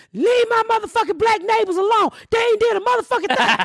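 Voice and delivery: mock angry, furious ranting in a very high voice. Retelling a neighbor confronting the sheriff: imitating an angry neighbor yelling. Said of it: "He went off on the sheriff".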